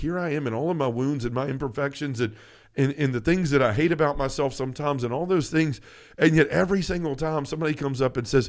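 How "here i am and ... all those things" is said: usual speaking voice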